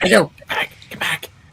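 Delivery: soft, high mumble. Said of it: "What are you mumbling about again?".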